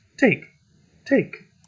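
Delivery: put-on light, high little child's voice. Voicing a character in a story scene, light childlike voice. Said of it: "he's going to speak in a little lighter voice, almost like a ch- children's voice".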